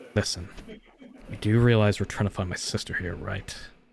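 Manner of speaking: low, soft whisper, close in the ear. Game narrator speaking as Edward, hand on the player's shoulder: Edward whispering. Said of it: "he'll whisper to you".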